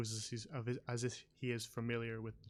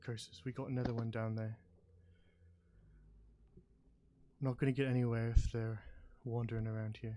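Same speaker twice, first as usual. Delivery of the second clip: raised voice, spoken up in character; 5 dB louder than usual. Narrator voicing a character who turns back to the listener: quiet voice. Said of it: "in a quiet voice".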